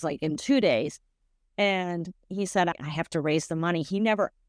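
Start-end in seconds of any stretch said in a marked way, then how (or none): none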